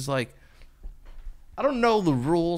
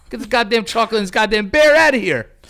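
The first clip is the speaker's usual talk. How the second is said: loud, angry rant. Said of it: "I'd fire them immediately".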